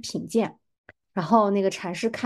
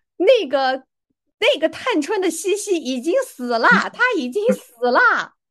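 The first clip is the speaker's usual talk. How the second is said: loud, high, hollered shout; 8 semitones higher, 6 dB louder than usual. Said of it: "他就大声地喊了一句说".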